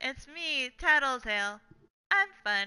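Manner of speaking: dry delivery with no excitement. Recalling a line that always made the speaker cackle, Tattletale's flat monotone. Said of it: "he says it in the most monotone".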